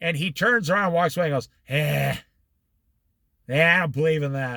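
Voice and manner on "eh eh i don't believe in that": put-on sneering tone, lower. Retelling a friend's reply to being prayed for: imitating a sneer. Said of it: "He actually sneered at me".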